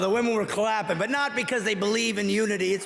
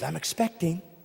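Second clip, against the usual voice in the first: mock female voice, lower; 4 semitones lower, 3 dB quieter than usual. Mocking special pregnancy words, quoting them: put-on woman voice. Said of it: "Woman voice, yes".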